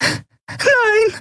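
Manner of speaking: very high, shrill screeching shriek. The Yari reacts as the armor turns toward Nelen's cell, shrieking. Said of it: "kreischte die Yari".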